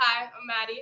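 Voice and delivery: very loud, booming theatrical stage projection. Guest redoes her introduction at the host's request in a theater projection voice. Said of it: "with that theater projection voice".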